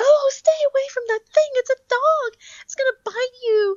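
whining voice, pitched very high. Recounting a mother warning her child away from the speaker's dog, imitating a high-pitched whiny voice. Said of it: "speaking in a very high-pitched, Whaley type of voice".

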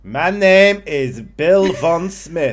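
put-on terrible, botched Cockney-German accent, shrill, very high, very loud. Retelling how German spies introduced themselves: terrible Cockney German accent. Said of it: "terrible fucking Cockney German accent".

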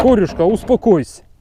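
high, loud, excited calling voice.

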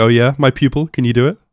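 happy, upbeat, bright, pleased tone. Retelling a scene where a teacher hears her pupil's claim: imitating Frieren sounding happy. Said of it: "Frieren like, happy about that, like".

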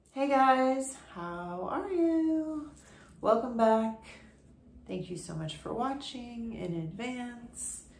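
really slow, unhurried and drawn out. Vlogger greeting viewers at the start of a video, talking really slow. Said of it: "I don't know why I'm talking really slow right now".

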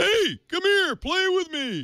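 put-on, cartoonish dad voice, shouting. Complaining that the phone game is too loud: Homer Simpson shouting. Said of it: "I have Homer Simpson shouting at me".

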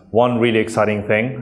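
heavily sarcastic, dripping with sarcasm. Describing their work over the last three months, very sarcastic. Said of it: "and I'm being very sarcastic here".

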